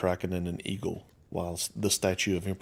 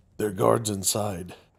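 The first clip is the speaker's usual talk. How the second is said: gruff, gravelly orc voice, kept polite; 2 semitones higher, 4 dB louder than usual. Narrator voices the orc guard at the iron doors: gruff, gravelly orc voice. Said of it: "the orc politely says with a gruff and graveled voice".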